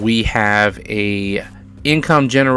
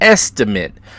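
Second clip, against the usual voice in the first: estimate set apart and stressed loudly. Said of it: "I emphasize the word".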